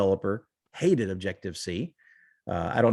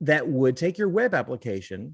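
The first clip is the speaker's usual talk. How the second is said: ordinary delivery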